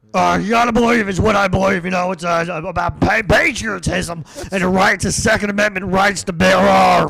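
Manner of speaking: very loud, halting, rambling ranting voice. Answering an interviewer's question while doing an Alex Jones impression. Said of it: "not that bad of an impersonation".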